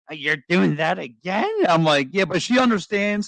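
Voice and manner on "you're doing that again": mimicked woman's voice. Telling the others how his wife reacts to his spending, imitating his wife's voice. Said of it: "You really got to do that voice".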